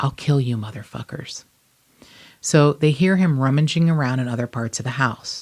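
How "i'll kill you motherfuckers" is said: put-on whisper. Retelling a robbery, the robber leans over to speak, imitating a whisper. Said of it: "he says in a whisper".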